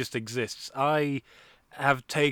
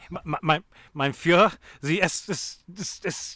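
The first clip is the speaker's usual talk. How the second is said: mock stuttering officer voice, higher; 5 semitones higher, 4 dB louder than usual. Joking about saying S S S S, playing a stuttering Nazi: put-on stuttering Nazi voice. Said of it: "I'm just a stuttering Nazi".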